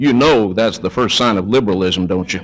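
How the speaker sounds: mock grave, dead-serious, low, very serious delivery. Retelling what a man said to him on the telephone, in a mock-serious tone. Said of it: "in a very serious tone of voice".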